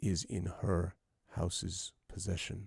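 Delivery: very quiet, deadly voice. Speaking in character while holding a sword on someone: very quiet deadly voice. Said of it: "I say very quietly, in a very deadly voice".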